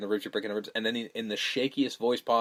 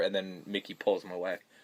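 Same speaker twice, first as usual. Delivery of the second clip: ordinary talk, nothing marked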